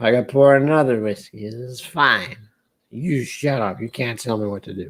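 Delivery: put-on slow, drawn-out, tipsy, blustering drunk talk. The speaker talks to the audience in a drunk-person impression. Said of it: "Doing an impression of a drunk person".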